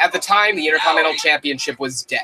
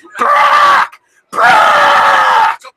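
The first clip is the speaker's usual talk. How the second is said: imitated scream, much louder and much higher; 9 dB louder than usual. Giving an example of what you prefer to hear during a match, imitating Paul Heyman screaming. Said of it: "Paul Heyman just screams".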